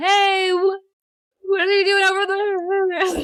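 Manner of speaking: far-off, very high, very slow, very drawn-out shout. Joking about how a bad connection will sound: mock shouting from far away. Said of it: "sound like you're shouting from really far away".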